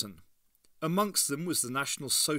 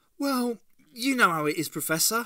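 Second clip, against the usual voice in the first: ill at ease, uneasy, high and raised voice; 9 semitones higher, 6 dB louder than usual. Answering the professor's remark about giving something up, uneasy. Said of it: "said Ace uneasily".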